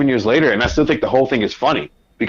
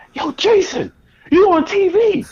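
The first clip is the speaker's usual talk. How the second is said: put-on shrill screaming shout, very high. Retelling how your brother called out on seeing you on tv, imitating a brother screaming. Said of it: "my brother is screaming like".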